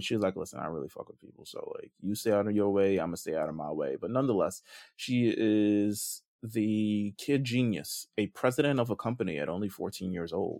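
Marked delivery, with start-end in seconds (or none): 0.3-3.9 imitated flat monotone voice, lower. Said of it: "it's a lot of monotone voice".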